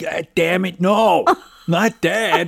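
put-on thick, heavy Brooklyn accent, loud and high. Acting out their complaint about dad, in a heavy brooklyn accent. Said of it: "I'm giving in the deepest Brooklyn accents I can think of".

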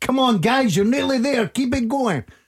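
put-on American coach voice, pitched way up. Imagining cheering on viewers while cycling for a living-room vlog, in a put-on american accent. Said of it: "You put an American accent on".

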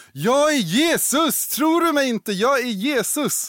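put-on very high, constant, drawn-out scream. Retelling a man who believed he was Jesus, acting out someone screaming. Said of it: "så han skrek hela tiden och sa".

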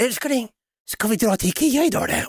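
sweet high-pitched tone. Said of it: "och hon säger".

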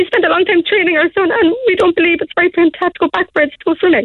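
high, tearful voice breaking with emotion.

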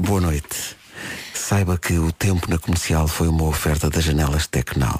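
deep nighttime radio program host voice. Announcing the weather segment's sponsor, in a deep late-night program voice. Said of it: "vou fazer uma voz grave. Como se fosse um programa noturno".

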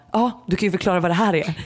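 plain

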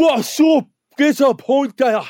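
very high, loud, aggressive barked call. Describing locals at the Bridge Tavern, the speaker imitates their greeting in aggressive tones. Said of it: "Very aggressive tones".

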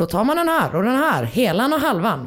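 put-on Scanian southern Swedish accent. Retelling a guy's little act while helping Markus with a tie knot, put-on Scanian accent. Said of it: "Fast på skånska".

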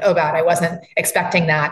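ordinary talk

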